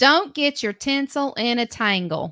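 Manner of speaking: strongly Southern way of talking. Presenting a chosen holiday phrase: very Southern accent. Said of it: "the way I'm going to say this is going to be very Southern".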